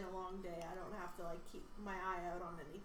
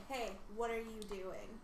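usual speaking voice

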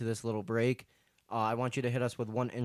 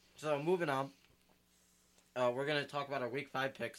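talking with mouth full, quieter; 3 semitones higher, 4 dB quieter than usual. Moving on to the week 5 picks while eating a cookie, mouth full. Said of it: "Sorry, I have food in my mouth".

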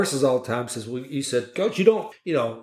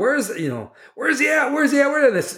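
mock scream, much higher, slower; 11 semitones higher than usual. A coach retells hunting for a missing player at halftime, retelling a scream. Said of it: "I was screaming, like".

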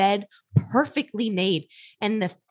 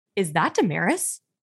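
put-on fussy, disapproving tone; 3 semitones lower than usual. Telling a story about a date night, imitating Wade's disapproving tone. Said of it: "In it was his tone".

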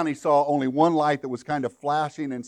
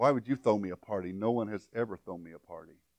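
mimicked mutter under breath, much quieter; 6 semitones lower, 9 dB quieter than usual. Retelling what Agnes muttered to herself when offered a party: retelling a mutter under breath. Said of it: "under her breath mutter".

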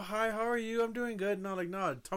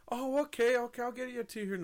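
mimicked fake friendly cheerfulness, higher; 4 semitones higher than usual. Retelling what the server said while handing over food: imitating fake friendly server. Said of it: "for that fake ass".

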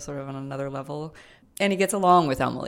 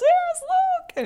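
very loud, very high-pitched yell; 6 dB louder than usual. Retelling yelling from the couch on spotting Luke: imitating her own yell. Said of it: "yelling from the couch".

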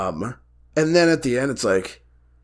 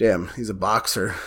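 ordinary talk

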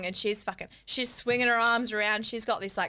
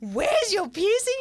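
mock, shrill, very high, loud shout; 10 semitones higher, 5 dB louder than usual. Retelling a question shouted during a pat-down: imitating someone shouting. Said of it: "shouts it out".

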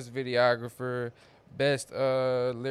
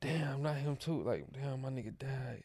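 put-on shocked gasp, quieter; 9 dB quieter than usual. Retelling own reaction to a photo collage on Facebook: retelling a shocked gasp. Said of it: "I gasp, like".

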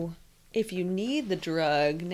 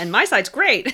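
very loud, put-on, fake-cheerful chipper chirp; 4 semitones higher, 8 dB louder than usual. Mocking a one-sided view in a conversation: put-on chipper tone. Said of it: "chipper way you said that".

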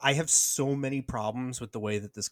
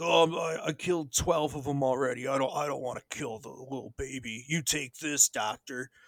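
dopey, dim-witted, dumb-sounding voice. Retelling a movie scene, quoting a character named Franklin: idiot's voice. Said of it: "What is that voice he did?".

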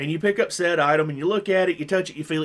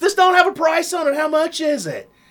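put-on, shrill, very high, top-of-lungs scream; 12 semitones higher, 5 dB louder than usual. Retelling how a customer in a store yelled at him: imitating a woman screaming. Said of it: "screams at the top of her lungs".

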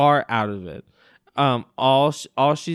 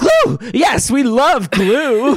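acted, loud, very high, drawn-out outburst; 10 semitones higher, 6 dB louder than usual. Retelling what Lorelai says when Luke mentions glue: imitating Lorelai loudly. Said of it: "kind of loudly like".

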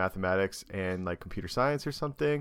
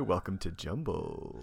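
soft, sexy, sensual late-night FM host voice; 3 semitones lower, 6 dB quieter than usual. A podcast host welcomes a guest to the show in a late-night FM radio voice. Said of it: "Very late night FM radio voice".

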